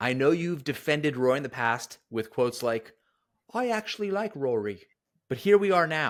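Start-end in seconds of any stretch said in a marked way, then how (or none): 3.5-4.8 bad fake British accent, much higher pitch. Quoting a commenter's past words back at them: terrible british accent. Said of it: "It's a terrible British accent".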